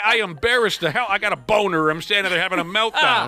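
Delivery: plain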